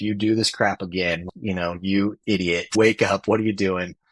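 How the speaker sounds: ordinary delivery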